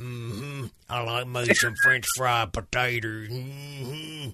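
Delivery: slow, long, drawn-out mm-hmms. Joking that an actor might speak like a movie character: Sling Blade voice. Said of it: "I swear I thought he was gonna go".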